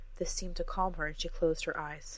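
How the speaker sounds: ordinary delivery, nothing marked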